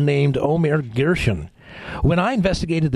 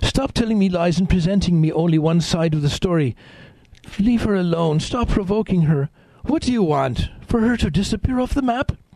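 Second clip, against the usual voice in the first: bad, rough approximation of South African accent; 4 semitones higher than usual. The speaker quotes a woman protesting to a doctor, in a lousy South African accent. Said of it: "Forgive my lousy South African accent".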